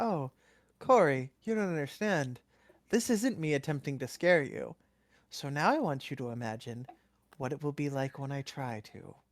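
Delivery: genial, warm, friendly, welcoming delivery. Voicing Angus, who answers Corey with a wide smile: warmly smiling voice. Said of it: "smiles widely and warmly and goes".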